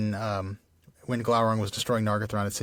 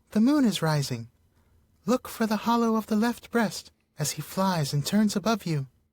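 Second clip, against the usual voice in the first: very high, small songbird voice; 11 semitones higher than usual. Reading a story aloud, the narrator voices a thrush speaking to Bard; thrush voice. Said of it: "I'm about to read a thrush voice".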